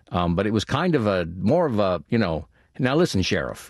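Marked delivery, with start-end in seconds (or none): 2.8-3.7 put-on nasal voice, higher. Showing the voice used for the role of Cooper: nasal Cooper voice. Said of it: "almost a nasal quality to it".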